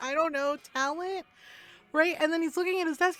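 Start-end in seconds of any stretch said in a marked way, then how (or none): 0.0-1.2 play-acted breezy delivery bubbling with laughter. Retelling her answer to a man asking how she did it, retelling a laughing reply. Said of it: "And I'm laughing".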